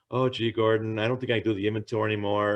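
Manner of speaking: ordinary talk, nothing marked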